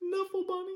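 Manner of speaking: very high, gasping voice.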